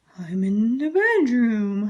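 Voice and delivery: slow, strange, wobbly, wavering voice. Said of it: "replied the wolf in a strange wobbly voice".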